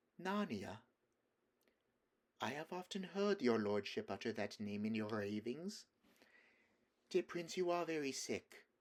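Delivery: soft, sugary, hushed voice. Narrator reads the woman speaking to the sick Prince, in a sweet, quiet voice. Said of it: "speaking in a sweet, quiet voice".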